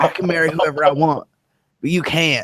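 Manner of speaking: put-on Texan accent in a politician voice. Quoting a woman who condemns others' sin: George W. Bush accent. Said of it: "I don't know why I'm doing the George W. Bush accent".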